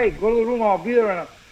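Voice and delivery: ordinary talk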